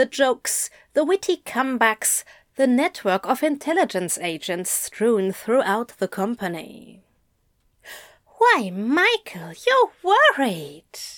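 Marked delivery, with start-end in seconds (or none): 8.4-11.0 fond, endeared, delighted, lightly pitched up. Narrator reads one character noticing another is worried; endeared and delighted. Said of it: "Aziraphale was as endeared as he was delighted".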